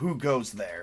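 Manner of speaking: low, growling, snarling orc voice. Voicing orcs who challenge approaching players: snarling orc. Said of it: "snarl, and go".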